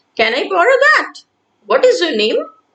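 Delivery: rising pitch on the words "that" and "name". Showing children how a question sounds: rising intonation at the end. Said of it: "The voice goes higher at the end".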